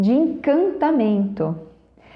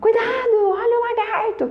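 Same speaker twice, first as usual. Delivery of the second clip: very high, shrill, mock-hysterical shout from afar; 10 semitones higher than usual. Retelling how a woman at the playground shouted a warning: imitating a woman shouting in panic. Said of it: "a moça gritou lá de longe".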